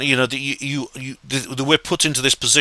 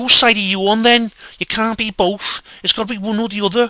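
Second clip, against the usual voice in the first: Scouse Liverpool accent; 8 semitones higher than usual. Redoing the line of someone asking which side you're on: Liverpudlian accent. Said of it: "it'd be in a Liverpudlian accent".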